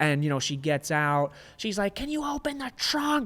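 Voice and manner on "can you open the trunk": put-on piercing, very high, nasty old-lady screech. Retelling the old lady ordering airport workers: imitating an old lady screaming. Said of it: "screaming at these guys".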